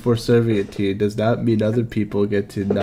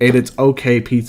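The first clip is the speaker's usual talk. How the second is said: plain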